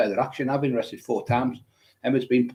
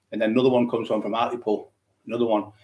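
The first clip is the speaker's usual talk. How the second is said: usual speaking voice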